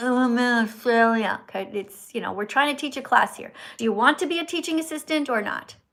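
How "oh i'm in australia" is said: half-asleep, slow, drowsy, unenthused. Mocking a student's answer as not awake enough: imitating a sleepy reply. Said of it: "You can't be like".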